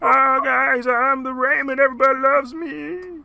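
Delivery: very high-pitched, loud, nasal voice. Introducing a new character who just comes in, nasal Raymond voice. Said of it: "He's all nasally".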